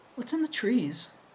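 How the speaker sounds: quavering, trembling voice pitched very high. In a story read aloud, a character speaks to the group, trembling voice. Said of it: "her voice trembling".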